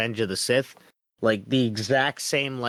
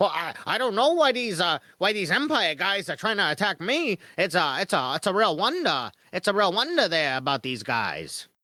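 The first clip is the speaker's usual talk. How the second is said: forties film patter, faint transatlantic lilt, higher; 8 semitones higher than usual. Describing a character attacked by empire soldiers, imitating his 1940s talky guy voice. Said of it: "he talks like a like um like a nineteen forties or fifties talky guy".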